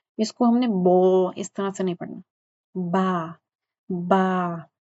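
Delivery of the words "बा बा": ba vowel drawn out slightly. Demonstrating pronunciation of a letter to learners, with a slightly lengthened ba. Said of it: "बा थोड़ा सा लंबा करना है".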